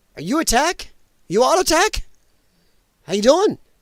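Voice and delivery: voice cracking. Greeting someone he calls his man on the show, voice breaking. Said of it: "my voice is breaking".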